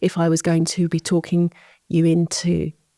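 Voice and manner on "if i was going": ordinary delivery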